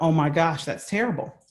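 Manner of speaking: usual speaking voice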